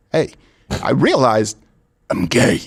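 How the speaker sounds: very slow voice, every word drawn out. Asked to do Christopher Walken, voicing Gerald: Christopher Walken voice. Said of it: "Christopher Walken as Gerald".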